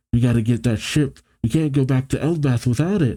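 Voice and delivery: ordinary delivery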